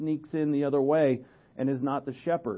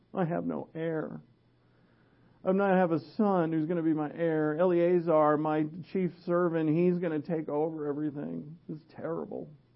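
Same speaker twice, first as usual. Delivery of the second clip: mock whiny complaining; 2 semitones higher than usual. Retelling Genesis 15, voicing Abraham's complaint to the Lord: imitating Abraham whining. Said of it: "you can hear his whining in his voice".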